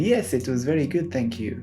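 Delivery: clumsy, bad, put-on French accent. Retelling what a man said back to him, bad put-on French accent. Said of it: "in a French accent ... it's my bad French accent".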